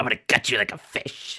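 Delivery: creepy, acted killer-doll voice. Planning a scary story episode, speaker tries a threatening voice like Chucky. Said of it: "your voice sounded like Chucky".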